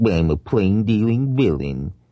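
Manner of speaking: drooping delivery with swooping pitch. Speaker recalls reading Don John's line from Much Ado About Nothing: Droopy voice. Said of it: "with a droopy dog voice".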